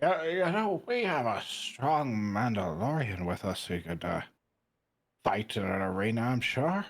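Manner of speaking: put-on feigned drunken speech. Recounting talking to a lady, pretending to be more drunk than they were. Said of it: "I pretend to be a little bit more drunk than I am and go".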